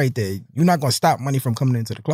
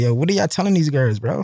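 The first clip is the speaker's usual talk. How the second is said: usual speaking voice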